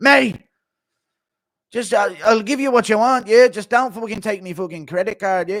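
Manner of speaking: very loud, high-pitched hollered outburst. Acting out Chandler's kids meeting McGregor, speaker does a McGregor impression. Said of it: "Impression of Chandler's kids meeting McGregor".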